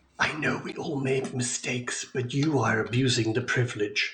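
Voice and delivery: judgmental whispering voice. Voicing a rock that whispers in a character's ear: judgmental whisper. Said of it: "whisper of rock in a very judgmental voice".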